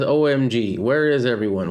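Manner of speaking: ordinary talk, nothing marked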